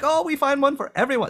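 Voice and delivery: put-on Filipino accent, pitched high. Retelling a waitress's words to the speaker and a buddy, imitating a Filipino accent. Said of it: "Sorry about the accent".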